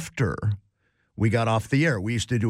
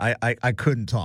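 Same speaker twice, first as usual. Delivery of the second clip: ordinary delivery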